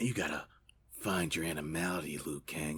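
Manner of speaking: very quiet, hushed, soft murmur. Retelling a movie scene where Nightwolf talks: imitating Nightwolf. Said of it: "he had this little talk like this".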